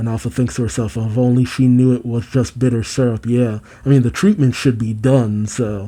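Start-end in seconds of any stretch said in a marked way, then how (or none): none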